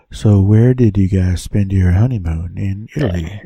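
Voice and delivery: unsettling, creepy, creeper-ish voice. An interviewer asks the guest a question, in a creepy voice. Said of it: "It's kind of creeper voice now".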